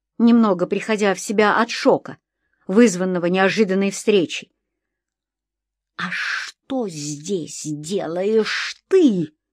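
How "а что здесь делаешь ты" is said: very quiet, very slow, drawn-out hiss. Reading a story: a man answers so the policeman cannot hear, hissing very quietly. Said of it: "прошипел он мне так тихо".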